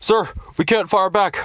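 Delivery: scared, fearful, very high-pitched voice. Reading a story where a caller reports they cannot fire back: fearful tone. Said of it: "a man with a fearful tone said".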